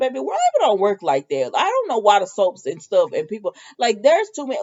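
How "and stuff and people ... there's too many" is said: normal talking voice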